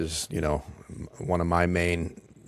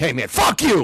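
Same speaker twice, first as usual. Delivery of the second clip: sudden, abrupt, very loud, high shout; 9 semitones higher, 9 dB louder than usual. Showing viewers how a sudden break from monotone grabs attention: sudden outburst. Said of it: "all of a sudden I'm like".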